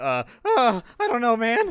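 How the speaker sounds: put-on acted raspy teen voice. In a game, play a guard holding the gate shut, as the scratchy-voiced teen from The Simpsons. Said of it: "scratchy voiced teen".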